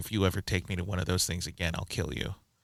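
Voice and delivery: deadpan, dead-serious, low, flat, expressionless tone. Retelling what a woman said after a movie: imitating a deadpan serious threat. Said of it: "deadpan very seriously".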